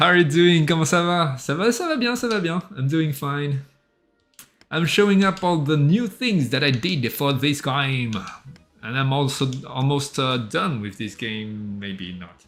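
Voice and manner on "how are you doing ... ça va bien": quick, pitched-up, put-on French accent. Greeting a viewer on stream, the speaker puts on a French accent. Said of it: "I'm taking the French accent".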